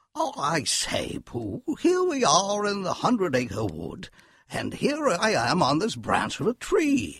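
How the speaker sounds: loud booming voice, slow and swooping. Asked to say something in the owl voice: Owl character voice. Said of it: "Would you say something with your owl voice for us?".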